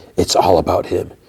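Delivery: theatrical whisper. Retelling a conversation, quoting what one man whispered, in a whisper. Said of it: "Frank whispers".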